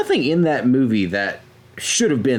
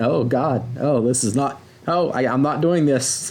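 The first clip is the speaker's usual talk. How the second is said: plain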